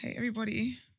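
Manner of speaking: weary-sounding. Greeting everyone after a headache all week: tired voice. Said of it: "Why's your voice like that?".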